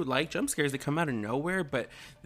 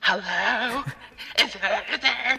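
put-on old lady voice, higher and louder; 9 semitones higher, 7 dB louder than usual. Imitating the mom answering the phone in Scary Movie: Scary Movie old lady voice. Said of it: "It's like some old lady voice".

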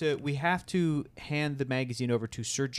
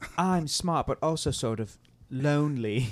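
put-on mock English accent. Taking turns doing English accents, playing a smart character, in an English accent. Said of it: "So we are doing English accents".

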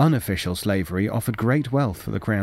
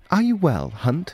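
high, wary, probing, suspicious tone; 7 semitones higher than usual. A man asks his sneezing companion about his health, asked suspiciously. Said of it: "Chambers asked suspiciously".

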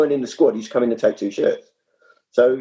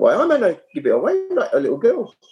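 put-on Geordie accent, pitched up; 5 semitones higher than usual. Retelling a mate's answer when asked where his gear was; imitating Gaz's Geordie accent. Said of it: "he went in his Geordie accent".

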